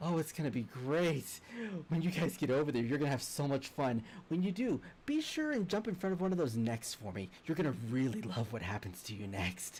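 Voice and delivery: delighted, gleeful voice with laughter running through. A voice from the ship speaks to the group, in a gleeful laughing voice. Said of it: "underlining laughter of someone who's just like they're enjoying the insanity".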